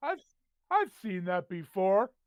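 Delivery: put-on loud, booming, drunken voice. Voicing a drunk stranger calling from over someone's shoulder: acting drunk. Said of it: "yeah, he's drunk".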